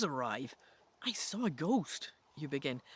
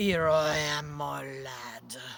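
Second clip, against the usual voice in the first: menacing, cruel croaking voice, close in; 3 semitones lower, 3 dB louder than usual. Narrating a second-person story, the reader voices someone in a dark room: cruel croaking voice. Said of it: "a cruel voice croaks in your ear".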